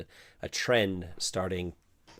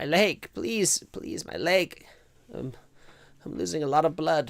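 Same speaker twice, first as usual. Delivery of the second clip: raised, high-pitched, pained, whimpering, begging voice; 8 semitones higher, 5 dB louder than usual. Voicing Ortal, who is losing blood from the leg, whimpering. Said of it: "Ortal is kind of whimpering now and says".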